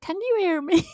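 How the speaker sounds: very high intercom voice. Retelling a conversation through an intercom: imitating an intercom voice. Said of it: "the sound effect of the intercom voice".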